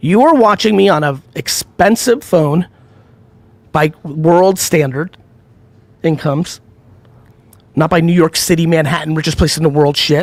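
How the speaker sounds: slow, deliberate, each word carefully spelled out. Addressing viewers who say their life sucks, saying it nice and slow. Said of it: "let me say this nice and slow".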